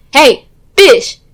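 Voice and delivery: sudden put-on loud, high-pitched shouted yell. Retelling a classroom story, acting out a woman who comes in, imitating a woman yelling. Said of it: "I just yelled fish".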